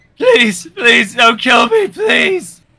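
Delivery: high-pitched, rising, begging plea. Voicing a surrounded enemy who begs for his life: begging for his life. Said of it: "he begs for his life".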